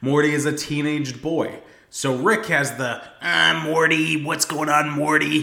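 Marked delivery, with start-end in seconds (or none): 3.2-5.4 knowingly bad put-on grandpa voice. Explaining the show's voice acting, the speaker does a terrible Rick impression. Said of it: "I do a terrible impression".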